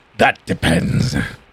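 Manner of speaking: deep growling voice. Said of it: "he growls and just goes".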